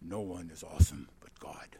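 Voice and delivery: put-on English accent. Retelling what an eight-year-old once said, speak in an English accent. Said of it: "in an English accent".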